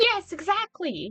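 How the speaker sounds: very high, put-on American accent. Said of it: "doing a high voice, which is, isn't my voice, and doing an American accent".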